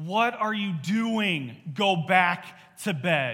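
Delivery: very slow, deliberate, stern put-on mother voice. Recalling their mom finding them up early, imitating her mom voice. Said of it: "she would say in that mom voice of".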